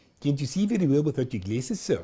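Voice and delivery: put-on South African accent, put on. Retelling what a woman asked him after calming a girl, South African accent. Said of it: "she said in her South African accent".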